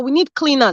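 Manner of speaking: ordinary talk, nothing marked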